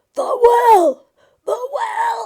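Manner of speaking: very high, very loud, very slow broken cry. Retelling a scene where the long-silent brother finally shouts, imitating Willie's broken shout. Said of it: "in this kind of like broken voice".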